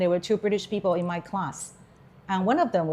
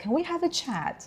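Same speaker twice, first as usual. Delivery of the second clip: very high, soft, put-on posh English accent; 9 semitones higher, 5 dB quieter than usual. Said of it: "married a posh person".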